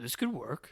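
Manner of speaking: rough, gruff put-on voice with odd inflection. Quoting a line from a movie: imitating a gruff weird inflection. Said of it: "a weird inflection to his voice. It's kinda, like, gruffer than he normally talks".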